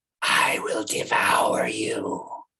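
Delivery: breathy, demonic whisper. Game master voicing a cat in the darkness, demonic cat voice. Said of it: "you hear its demonic voice".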